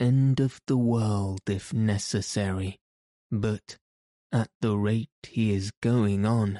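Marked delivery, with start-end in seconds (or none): none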